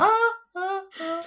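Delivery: very high, loud falsetto scream, "ah-ah-ah". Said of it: "that scream was very reminiscent of ... Staying Alive".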